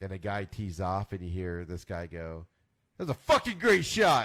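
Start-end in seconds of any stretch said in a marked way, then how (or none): 3.0-4.3 sudden, loud, high-pitched blurted outburst. Retelling a live golf broadcast where a guy shouts after a tee shot, blurting it out really loud. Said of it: "Just blurts it out really loud".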